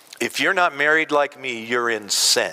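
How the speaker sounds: ordinary talk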